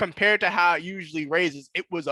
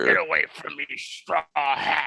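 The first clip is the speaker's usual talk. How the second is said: put-on anime dub voice; 3 semitones lower than usual. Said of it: "I do like Smoker, uh, English voice".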